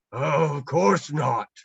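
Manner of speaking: deeply shocked, exclaiming voice. Narrator reading the bear's reply to Peter, in a very shocked voice. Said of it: "said the bear in a very shocked voice".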